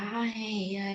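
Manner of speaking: acted small chuckle. Recalling how you just laughed off someone's remark about your acne, retelling a small laugh. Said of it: "cuma bisa ketawa-ketawa kecil kayak".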